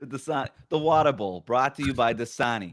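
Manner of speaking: really bad, limited, clumsy Boston accent. Jokingly naming a bowl game after a water brand: really bad boston accent. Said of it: "that was my really bad, limited Boston accent".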